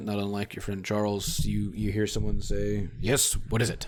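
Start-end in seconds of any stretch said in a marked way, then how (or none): 3.0-3.9 put-on gruff voice in a strange, odd British accent. Game master voicing Crowley answering the phone, gruff voice with British accent. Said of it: "gruff voice, in German, but with a weird kind of British accent".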